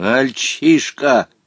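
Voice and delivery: disdainful, contemptuous, scornful tone. Omar Yusuf answering Volka, contemptuous. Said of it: "презрительно бросил Омар Юсуф".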